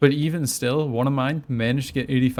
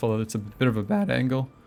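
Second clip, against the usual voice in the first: voice cracking and breaking. Commentating a game battle, the player keeps narrating with voice cracking. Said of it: "Sorry for the voice crack there".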